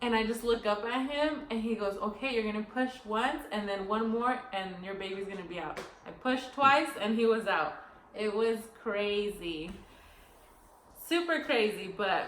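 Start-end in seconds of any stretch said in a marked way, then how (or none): none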